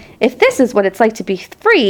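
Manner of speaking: plain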